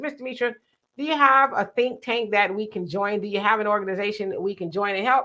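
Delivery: ordinary talk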